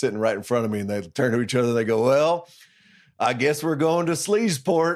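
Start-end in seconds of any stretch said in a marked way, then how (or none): 2.0-5.0 put-on old men's Texan drawl. Retelling what two old guys at a bowl game said, old texas accents. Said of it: "two old guys in Texas accents".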